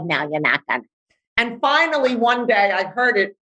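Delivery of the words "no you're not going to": bratty, defiant voice. Acting out an inner argument about meditating: imitating her defiant inner brat. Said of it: "my brat was like".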